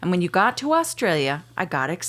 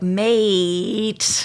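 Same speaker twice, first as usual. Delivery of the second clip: "mate" with long, drawn-out, pulled vowel. Showing how people extend the word as an expression: drawn-out "mate". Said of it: "we extend it like".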